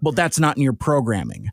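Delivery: contempt and open scorn in every word. Retelling how Ultra Magnus talks to Optimus: Ultra Magnus voice, imitating disdain. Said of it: "such vile and, and, and disdain".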